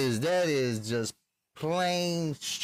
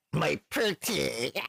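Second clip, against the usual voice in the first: put-on witch voice. Showing how such people sound: Disney witch voice. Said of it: "They sound like, uh, Disney witch people".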